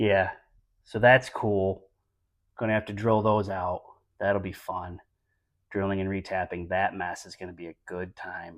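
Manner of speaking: very quiet, flat, dry deadpan sarcasm. Describing broken header bolts that must be drilled out: sarcastic. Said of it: "Do you hear the sarcasm?".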